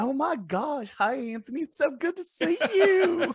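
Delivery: very high, very slow, saccharine sweetness. Imitating how the real evil Dina would sound: imitating a super sweet voice. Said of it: "super sweet, be like".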